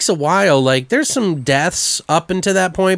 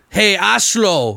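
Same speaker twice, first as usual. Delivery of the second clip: put-on German accent, asshole pronounced as Ashlo; 3 semitones higher than usual. Retelling a movie character's line: imitating a German-accented movie line. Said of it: "That's how you say asshole in German".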